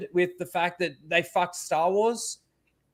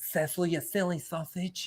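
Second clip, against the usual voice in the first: soft, campy put-on voice; 8 dB quieter than usual. Getting into your Jacob mode and addressing Cecil, do a Jacob voice. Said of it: "This is my Jacob mode".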